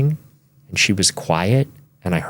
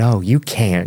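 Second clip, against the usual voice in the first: put-on Arkansas accent, slower. Retelling the answer of a woman from Arkansas to a question, imitating her Arkansas accent. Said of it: "she, with her accent".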